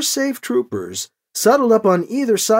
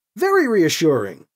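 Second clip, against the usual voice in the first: usual speaking voice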